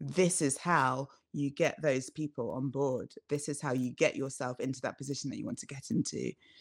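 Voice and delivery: ordinary talk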